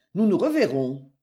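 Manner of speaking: ordinary delivery, nothing marked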